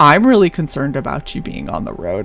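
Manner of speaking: deadpan, dead serious delivery with swooping pitch. Speaker retells what she said to them, imitating her deadpan delivery. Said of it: "she just looked at me deadpan and was like".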